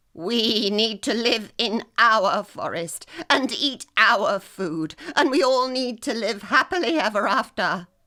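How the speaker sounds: loud, fierce, angry voice. Narrator voicing Stick rallying the animals against the grey squirrels: angry and fierce. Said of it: ""I am your general. / and so he continued".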